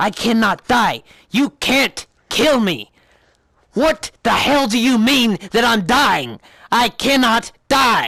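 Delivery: panicked emotional outburst. Retelling an emotional scene where a character loses it; imitating someone losing it. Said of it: "This is supposed to be emotional".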